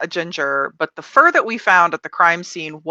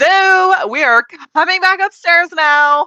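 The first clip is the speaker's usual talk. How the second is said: very high, loud, shouted character voice; 12 semitones higher, 6 dB louder than usual. Leaving the basement, the speaker's character calls upstairs in a shouting character voice. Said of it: "char- character voice".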